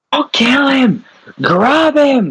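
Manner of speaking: piercing, high-pitched, shrill scream. Playing a character running toward the Goblin Boss, screaming out in character. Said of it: "I'm just gonna scream out".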